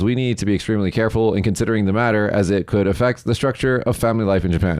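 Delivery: normal talking voice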